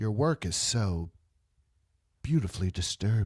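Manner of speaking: low, sultry, seductive tone. Quoting a movie character talking to an art dealer: imitating a sultry tone. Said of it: "in that sultry tone".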